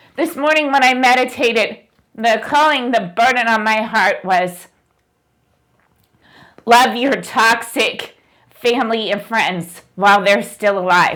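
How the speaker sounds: tearful speech through crying, voice breaking. Speaking to viewers in a video, apologizing for tears, crying. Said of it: "I'm sorry I'm crying".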